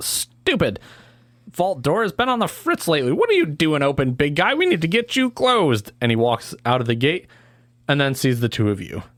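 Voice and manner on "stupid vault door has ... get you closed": rather nasal little man voice, swooping pitch. Game master voicing a character who finds the vault door open; nasally little man voice. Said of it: "a rather nasally little man go".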